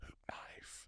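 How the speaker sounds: mock excited whispering. Recalling what he whispered to himself at the shower head, retelling an excited whisper. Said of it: "I immediately whisper to myself excitedly".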